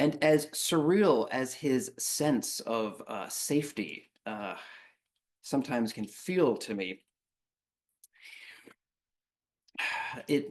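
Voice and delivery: slow, choked-up words, emotion catching in throat. Reflecting aloud during a story, getting a little choked up. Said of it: "a little choked up there".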